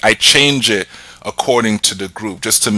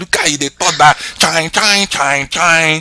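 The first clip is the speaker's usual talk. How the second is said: put-on teasing voice, higher; 8 semitones higher than usual. Retelling an auntie's teasing about fancy grammar: imitating an auntie teasing. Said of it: "That's what my auntie would say".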